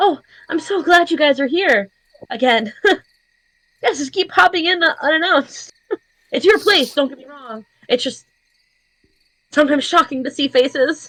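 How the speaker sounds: glad, excited, high-pitched, happy voice. Voicing a host making breakfast who greets the returning group, happy and excited. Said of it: "happy and excited to see you all again".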